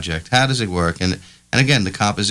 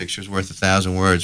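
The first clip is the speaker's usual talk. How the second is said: plain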